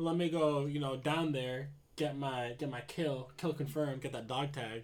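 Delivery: ordinary delivery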